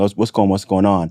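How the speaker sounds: normal talking voice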